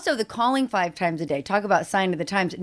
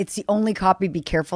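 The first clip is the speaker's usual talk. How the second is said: usual speaking voice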